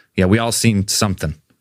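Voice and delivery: ordinary delivery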